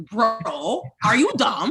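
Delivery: laid-back, very slow, drawn-out, swooping casual delivery. Show how your brother says it, imitating your own brother. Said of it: "This is how my brother says it".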